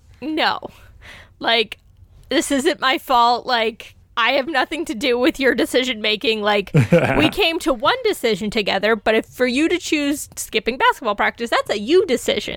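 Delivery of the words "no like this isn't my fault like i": plain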